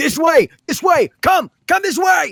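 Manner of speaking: very high, distant shout with heavy echo. Narrator voices someone calling to the players from a couple ways back, distant echoing shout. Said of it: "shouting, echoing through the tunnels".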